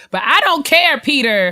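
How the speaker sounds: high, loud, sassy scolding voice.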